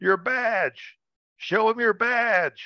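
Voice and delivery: very high, shouted yell. Telling a story, the speaker re-enacts yelling at a man chased by a bull. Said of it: "I yell out at the guy".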